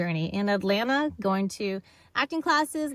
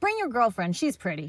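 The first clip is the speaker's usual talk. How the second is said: ordinary delivery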